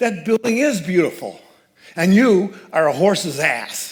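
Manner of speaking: loud, high-pitched put-on New York accent. Retelling a stranger on the street scolding someone, in a New York accent. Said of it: "she said in a New York accent".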